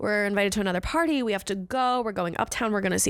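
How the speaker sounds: ordinary talk, nothing marked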